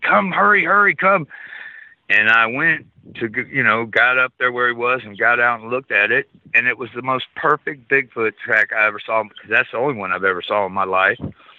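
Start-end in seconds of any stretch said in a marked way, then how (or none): 0.0-1.3 frantic, urgent, very high-pitched hollering scream. Retelling someone screaming to come see a track: imitating someone screaming. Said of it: "screaming at me".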